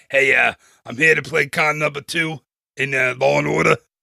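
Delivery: put-on Brooklyn accent, tough-guy voice. Playing a down-on-his-luck actor from Brooklyn at an audition, Brooklyn accent. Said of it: "That's my Brooklyn accent".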